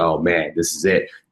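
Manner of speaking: normal talking voice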